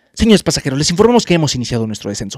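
grave, scary, ominous airline captain announcement voice. Retelling a flight announcement heard through clouds, imitating a scary announcement tone. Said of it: "pero a ese tono de voz".

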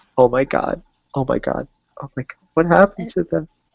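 high, tearful crying through the words. Voicing Emily as she makes it upstairs in the story, Emily crying. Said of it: "and she's crying".

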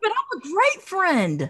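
very high, loud, astonished and shocked exclamation. Speaker reacting to another speaker's remark in a group conversation, shocked. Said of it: "the shock in your voice is killing me".

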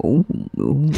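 super mellow, laid-back, deep voice. Showing a new catchphrase: super mellow deep voice. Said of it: "in just a super mellow, deep voice".

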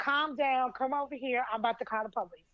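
ordinary talk, nothing marked

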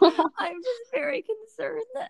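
put-on very high, very slow, drawn-out voice near tears. Imitating another speaker who seemed to be crying: imitating a teary voice. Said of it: "I thought you were crying when you said that".

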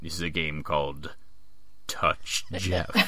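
deep, dopey, clueless villain voice. Improv performer voicing the villain Jeff, deep Jeff villain voice. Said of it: "I do a deep voice with Jeff".

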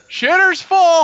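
shrill, very high yell at full volume. Retelling how a man shouted from outside while pumping sewage: retelling a yell. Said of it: "And he just yells".

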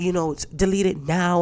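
usual speaking voice

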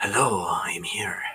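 very slow, deliberate, every word drawn out. Joking that a masked hero bursts into the room: Zorro voice. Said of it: "Zorro's about to come into my room and be like".

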